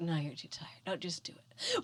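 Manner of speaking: soft, whispered, argumentative inner-debate tone.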